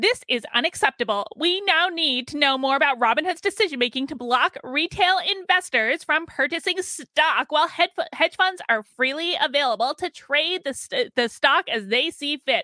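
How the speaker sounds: crazy put-on politician voice, slowed down. Reading out a tweet after asking to do the voice, in a crazy AOC voice. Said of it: "Can I do my crazy AOC voice?".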